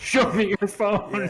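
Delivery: put-on rowdy drunken shout, high and slow. Acting out a reprimanded drunk person who shouts at everyone: imitating a drunk person shouting. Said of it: "shouts at everyone around them".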